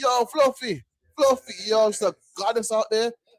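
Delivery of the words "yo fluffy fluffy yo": lazy, very slow, stretched-out drawn-out call. Imitating men in Jamaica calling to a woman: imitating men calling out to a woman. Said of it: "all these brothers that want the red book".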